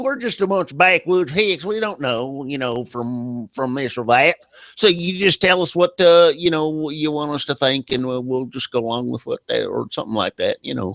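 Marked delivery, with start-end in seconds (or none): 0.0-9.7 country bumpkin yokel talk. Mocking how someone talks down to locals: put-on backwoods hick voice. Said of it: "you just sounded like a backwood hick there".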